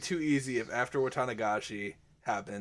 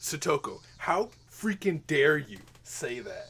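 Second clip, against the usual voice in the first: slow, play-acted, pissed-off, indignant outburst; 3 semitones higher than usual. Streamer imagining how the game character will react, imitating angry Keiichi. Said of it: "my character's about to get pissed off".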